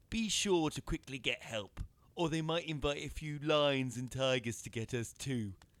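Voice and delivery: high, loud, taunting, mocking tone. Narrator reads a character hauling up a well bucket, speaking to his companion: mocking tone. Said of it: "he said in a mocking tone".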